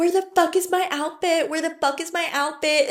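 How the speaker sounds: full-on screaming tantrum, high and shrieking. Retelling a friend freaking out over a missing outfit: imitating a screaming tantrum. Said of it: "full on tantrum".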